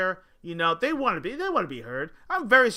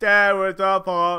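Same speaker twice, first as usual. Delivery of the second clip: put-on slurred voice, louder; 7 dB louder than usual. Doing an impression of Crackhead Bob: imitating Crackhead Bob. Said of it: "Crackhead Bob".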